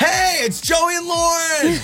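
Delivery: loud shouted delivery. Starting the show in a yell, as asked: yelling the show opening. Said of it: "Start the show".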